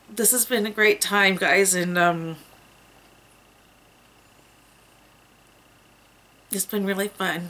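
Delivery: on the verge of crying, barely holding back tears. Saying goodbye before being gone three weeks, holding back tears. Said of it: "I'm trying not to cry".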